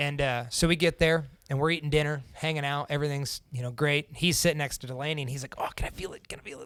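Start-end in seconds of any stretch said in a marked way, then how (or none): 5.6-6.7 put-on excited voice, quieter. Retelling a friend's words at dinner: imitating an excited friend. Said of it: "he's so excited, so excited about it".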